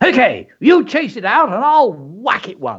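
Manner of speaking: high, roaring, bellowed, braced shout. A father leans forward and braces himself, roaring to the mother. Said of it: "roared his father".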